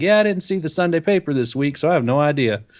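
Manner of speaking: put-on Southern accent. Retelling a chat with a stranger in a store by voicing her replies, imitating a southern accent. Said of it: "I love how you slip into the accent".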